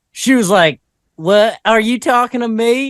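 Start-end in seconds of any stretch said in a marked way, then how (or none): 1.2-3.0 put-on strongest, craziest, high-pitched wild Alabama accent. Retelling what a woman asked him, imitating her crazy Alabama accent. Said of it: "she had the craziest Alabama accent".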